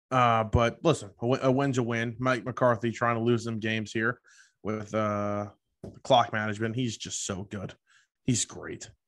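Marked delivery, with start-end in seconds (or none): 6.7-8.8 sarcastic, ironic tone. Praising a football coach's clock management, sarcastic. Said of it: "That's really sarcastic".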